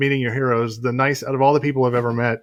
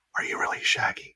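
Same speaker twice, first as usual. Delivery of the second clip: soft, breathy little whisper. Retelling how Kira asked the actor a question: imitating Kira whispering.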